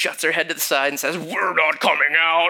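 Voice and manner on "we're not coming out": wild, crazy, possessed-sounding voice. Retelling praying over a woman, quoting the voice that came out of her: crazy voice. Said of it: "this crazy voice comes out of her".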